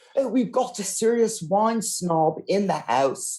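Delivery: put-on poorly done English accent. Imitating restaurant staff spotting a wine snob: bad English accent. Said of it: "they're gonna have a really bad English accent suddenly".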